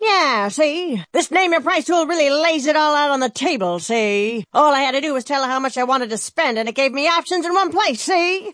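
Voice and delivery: put-on old-time gangster voice, hoodlum style. In a Progressive ad, doing an impression of a 1930s gangster. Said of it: "my impression of a 1930s gangster".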